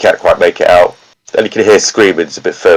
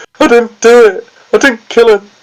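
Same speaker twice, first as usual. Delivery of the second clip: acted crying in a man's voice; 13 semitones higher than usual. Describing a man in a cell shouting for his son, imitating him crying. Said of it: "he's crying".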